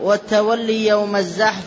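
usual speaking voice

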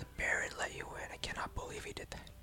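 hushed, whispered mutter under the breath. Voicing a townsperson shocked the baron let a dragonborn in: muttering under breath. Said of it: "he says under his breath".

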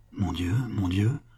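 trembling murmur. Concepcion, told to look at the assassin one last time, in a trembling murmur. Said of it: "dont la voix était plus tremblante que celle d'un vieillard".

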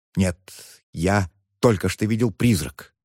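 plain

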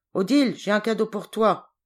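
loud, gruff man's shout. Narrator reads a man dismounting and calling to odile: gruff shout. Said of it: "cria l'homme d'un ton bourru".

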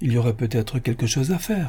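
soft, quiet murmuring. Narrator reads the chancellor's reply to the rich man: murmured. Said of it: "murmura le chancelier".

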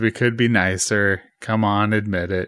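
ordinary talk

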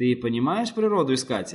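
usual speaking voice

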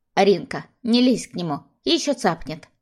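plain reading voice

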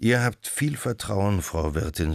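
plain

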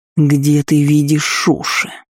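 hissing, snake-like voice. An enraged elf returns to the healer and answers her, snake-like hiss. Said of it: "по-змеиному прошипел".

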